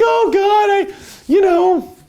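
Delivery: very high-pitched, desperate cry.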